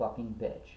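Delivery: put-on muttering under the breath. Retelling what a man said as his car drove away, muttering under his breath. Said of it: "he mutters under his breath".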